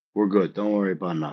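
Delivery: put-on very low, hushed Italian mob boss voice. Pitching a bit playing a bald Italian capo, answering someone, in an Italian mob boss voice. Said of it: "slick back bald Italian".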